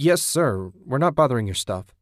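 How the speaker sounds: taken aback. Ted, backing away from a man who charged out at him, startled. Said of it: "Ted said, startled".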